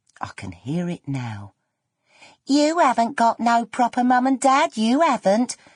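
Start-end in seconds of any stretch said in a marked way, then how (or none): 2.4-5.6 high, slippy, slimy, jeering tone. Recalling a taunt heard in the playground at seven, in her slippy, slimy voice. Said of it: "in that slippy, slimy voice she used to use".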